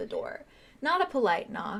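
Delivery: ordinary delivery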